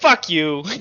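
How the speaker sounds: low cackle, kept to himself. Voicing a character muttering to himself after apologizing: cackling to himself. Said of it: "cackles to himself".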